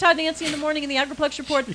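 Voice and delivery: very fast, rattled-off speech. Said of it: "This is the time I get to talk really fast".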